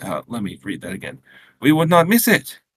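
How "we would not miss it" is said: put-on light Quebec French accent. Reading a story aloud, a mother greeting her son: quaint Quebecois accent. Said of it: "Marie said in her quaint Quebecois accent".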